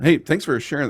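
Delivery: voice breaking mid-phrase. Thanking a guest for sharing: voice cracking. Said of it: "my voice really cracked right there".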